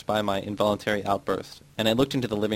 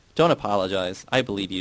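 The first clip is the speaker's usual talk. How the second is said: ordinary delivery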